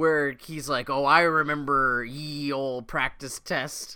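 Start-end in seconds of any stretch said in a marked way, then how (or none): 1.1-4.0 put-on pirate voice, slower. Recapping a scene where a character plays Quint, Quint pirate voice. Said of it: "pirate voice and all".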